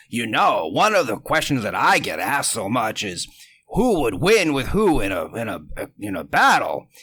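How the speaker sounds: put-on deep elderly man voice. Retelling a clip of Stan Lee answering questions from his desk: old Stan Lee voice. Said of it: "he was saying in his old voice".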